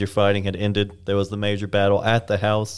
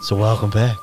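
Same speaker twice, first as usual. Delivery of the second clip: put-on, mock soothing voice; 4 dB louder than usual. Opening a podcast episode to the cohost: put-on soothing voice. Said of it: "I forgot you did this goddamn voice".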